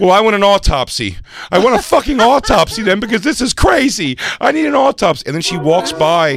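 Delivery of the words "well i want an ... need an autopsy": flustered, frazzled, high, insistent, demanding voice. The speaker retells what a woman kept saying as she walked by, imitating a frazzled woman. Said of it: "she's so frazzled now".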